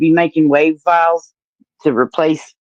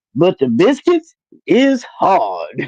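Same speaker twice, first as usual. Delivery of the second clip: silly, affected put-on voice, swooping and slow. Retelling what a man said once recording started, imitating his put-on voice. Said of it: "he did a voice".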